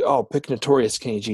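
ordinary talk

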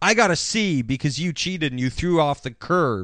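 plain

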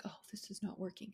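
put-on frustrated tone. Acting out a woman in a Febreze ad, imitating a frustrated woman. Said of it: "She's so frustrated".

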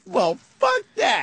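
brash, confident. Retelling a story, the speaker acts out what a woman said, mock-cocky and confident. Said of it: "she's all cocky and confident going".

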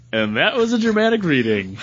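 ordinary talk

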